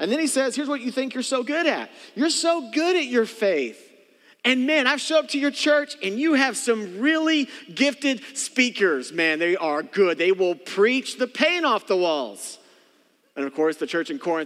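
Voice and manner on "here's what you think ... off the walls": put-on sarcastic voice, higher pitched. Retelling what Paul writes to the church: imitating Paul being sarcastic. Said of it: "Maybe a little sarcastic here".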